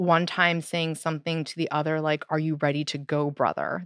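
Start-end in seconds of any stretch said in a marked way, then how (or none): 2.3-3.9 put-on deep demon voice, lower. Retelling what a possessed child said to his brother: imitating a deep demonic voice. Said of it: "They would speak in that deep demonic voice".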